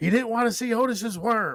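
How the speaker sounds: very high, loud, wild commentator shriek and scream. Retelling a wrestling match moment, imitating McAfee screaming. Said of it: "and McAfee just screams".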